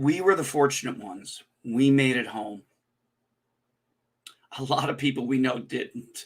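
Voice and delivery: voice cracking, choked up, near tears. Thanking Nina for her support, speaker goes on with voice cracking, tearing up. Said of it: "if you hear my voice crack and I start tearing up".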